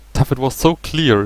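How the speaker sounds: ordinary delivery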